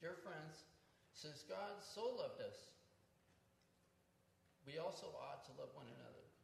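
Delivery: emotional, choked-up voice, tight throat, breaking. Reading a Bible passage aloud before a gathering, getting choked up. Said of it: "I got choked up there".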